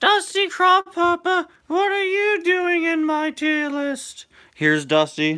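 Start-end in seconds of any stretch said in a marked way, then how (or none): 0.0-4.3 put-on very high, slow, drawn-out British accent. Quoting a video line in a put-on voice: Mickey-like voice with British accent. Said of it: "do an impression of Mickey with a British accent".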